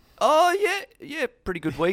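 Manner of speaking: croaky, squealy voice crack. Answering about a good week on an investment markets show, croaky, squealy voice crack. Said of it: "Did your voice change there?".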